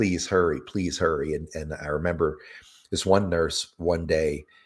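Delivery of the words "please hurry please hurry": mock-tearful, crying, pleading tone. Recalling begging the hospital staff to hurry, imitating tearful begging. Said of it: "crying, and and begging them".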